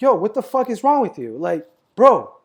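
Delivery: very loud, angry yelling. Retelling getting out after a crash at the other driver: imitating own yelling. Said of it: "I start yelling at the dude like".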